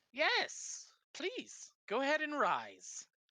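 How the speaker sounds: hearty, jolly, booming high voice. The narrator voices the king telling the visitors to rise, jolly booming voice. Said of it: "A jolly voice booms out".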